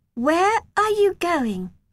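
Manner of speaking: wary, distrustful, suspicious, very high pitch. Narrator reads a girl stopping the narrator from leaving, in a suspicious voice. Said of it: "She said in a suspicious voice".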